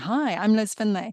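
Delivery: smiling while speaking, rehearsed-sounding. Showing a pre-meeting voice warm-up: smiling while speaking. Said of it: "And I'm smiling".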